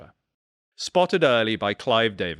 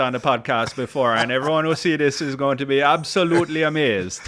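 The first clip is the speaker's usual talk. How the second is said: fake put-on Jamaican accent, high and loud; 5 semitones higher, 5 dB louder than usual. Welcoming a guest on the podcast, the host jokes: put-on Jamaican accent. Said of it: "Me never done this accent".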